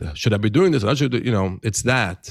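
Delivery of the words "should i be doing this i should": put-on old-world, old-style European Yiddish-inflected accent. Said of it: "that voice that".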